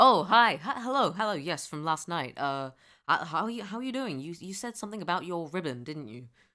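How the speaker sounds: loud, dopey, airheaded himbo voice. Role-playing greeting someone from last night, entering himbo mode. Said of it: "I need to get into himbo mode".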